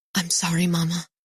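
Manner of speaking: loud stage whisper. Reading a story aloud, the narrator apologizing to mama: loud whisper. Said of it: "I say in a loud whisper".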